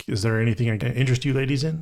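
normal talking voice

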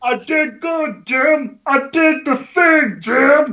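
high, slow, dim-witted voice. Cousin Eddie, having just drawn first blood, calls to Jim in a dim-witted voice. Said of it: "Cousin Eddie, the dumb one, / He knows his cousin isn't the brightest dude, / He knows his cousin isn't the brightest dude".

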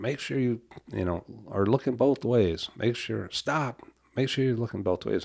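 put-on, mild, urgent calling-out voice. Telling of warning a neighborhood child crossing the street: retelling a yell. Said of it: "And I'm yelling from".

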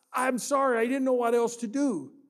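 imitated crying. Telling a story, voicing a crying kid apologizing to a man, imitating tearful apology. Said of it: "He's got tears rolling down his face".

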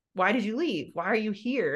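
plain

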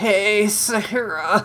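high, annoying, pained voice, squeezed out painfully. Describing a nerdy boy character, a speaker does an annoying Jason Funderburker voice. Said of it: "he's got, like, the annoying voice".

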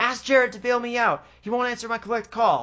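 high-pitched screaming. Retelling a wrong-number phone call, the speaker acts out the caller's scream. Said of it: "She screams".

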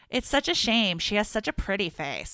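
invented New York Brooklyn voice. Speaker imagines what her mother would say when seeing him, invented Brooklyn mom accent. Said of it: "inventing this like Brooklyn mom".

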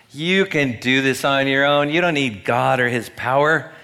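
put-on heavy sarcastic mockery, loud and dripping. Repeating bad advice to a Sunday church audience: put-on dripping sarcasm. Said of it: "the dripping sarcasm".

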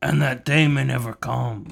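loud, wide-ranging mobster movie voice impression.

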